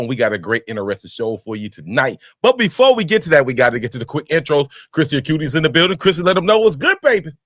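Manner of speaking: very fast, rapid-fire, rattled-off host patter. Podcast host opening the episode and bringing in the next speaker, talking very fast. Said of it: "you are talking so fast".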